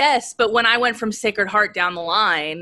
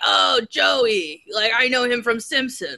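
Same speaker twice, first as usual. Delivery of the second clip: put-on easygoing voice, a bit higher in pitch; 5 semitones higher than usual. Telling the host how their dad talked about him, doing an impression of their dad. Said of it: "That's my impression of my dad".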